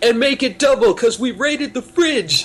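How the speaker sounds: put-on mouth-full voice. Retelling a Pokemon scene where James finishes the motto, imitating James with mouth full. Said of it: "James with his mouth full is like".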